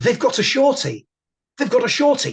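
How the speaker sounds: put-on very high, sudden cry. Retelling how somebody suddenly shouted during dinner; retelling a sudden shout. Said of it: "suddenly somebody shouts".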